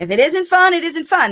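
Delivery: the word "fun" punched up high. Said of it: "That's why I called my book".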